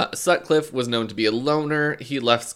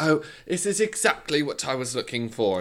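put-on, fake British accent. Retelling what a woman at the grocery store said: imitating a put-on British accent. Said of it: "Some woman was doing a British accent".

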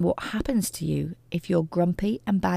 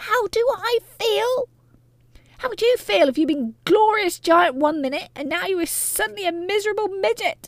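very high-pitched, shrill, enraged, furious yell; 14 semitones higher, 5 dB louder than usual. A shrunken grandmother answers her daughter's question, yelling furiously. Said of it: "she yelled".

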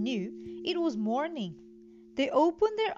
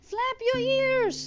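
high-pitched urgent crying out; 10 semitones higher, 4 dB louder than usual. As Dumbo drops the feather and starts to fall, Timothy calls to him, crying out. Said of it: "cried Timothy".

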